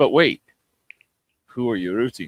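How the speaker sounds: put-on French accent. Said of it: "very thick Frenchman, Fre-, French accent".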